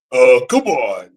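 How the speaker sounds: goofy put-on ghost character voice. Showing the voice of another ghost character: Fatso voice. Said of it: "I can do the voice of Fatso".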